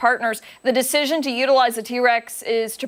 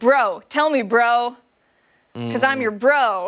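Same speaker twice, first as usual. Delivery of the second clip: put-on mocking tone. Retelling saying "bro" back to a partner: retelling own mocking reply. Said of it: "do it back in a, uh, mocking way".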